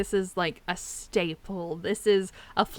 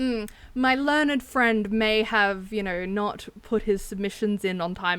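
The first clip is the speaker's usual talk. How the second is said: ordinary talk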